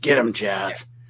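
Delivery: rough, gravelly indie wrestler voice, dropped low. Retelling what Glenn Osborne said at a wrestling show, Glenn Osborne's gravelly wrestler voice. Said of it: "in his gravelly indie wrestler voice".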